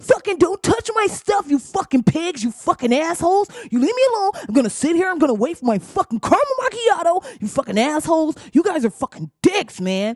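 mock angry yelling. Describing how police would treat a man, the speaker acts out his angry yelling. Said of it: "sir, please keep your voice down".

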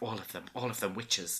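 muttering under breath. Retelling what a secretary said while anxiously waiting, muttering under her breath. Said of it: "she's kind of muttering under her breath".

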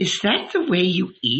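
high, scornful, mocking hiss. A narrator reads a woman's line to a hungry youth, hissing. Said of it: "she hissed".

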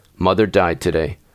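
usual speaking voice

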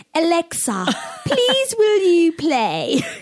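very high, very slow put-on posh voice. Retelling talking to an alexa, putting on a posh voice. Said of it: "I try put on".

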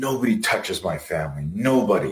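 play-acted, fuming rage boiling just under the surface. Retelling what a seething mom in the class said: imitating a seething mom. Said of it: "you could see she's seething".

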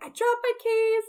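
mock very high, panicked, flipped-out shouting. Retelling dropping keys down the stairs: imitating own yell.

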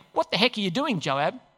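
plain

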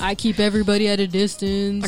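mocking imitation of a man's voice. Mocking what guys say about being distant, in a mock guy voice. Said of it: "Why do we do that voice?".

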